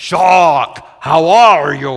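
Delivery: put-on big, booming Romanian accent. Retelling how a man used to greet you, in his big, deep romanian voice. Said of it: "in his big, deep Romanian voice and accent and say".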